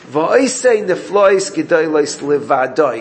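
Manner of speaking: levadoi stressed in a slow reading. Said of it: "The stress on the word levadoi".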